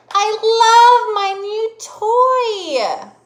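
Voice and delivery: very high, booming, very slow delight, "toy" drawn out. Reading an example sentence so listeners can guess its punctuation mark, excited. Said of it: "I was excited to tell y'all that".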